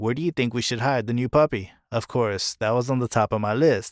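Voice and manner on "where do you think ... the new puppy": ordinary talk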